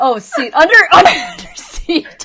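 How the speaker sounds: loud, high talking through laughter. Correcting a word to another speaker: laughing while talking. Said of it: "sorry, I had to laugh for a second".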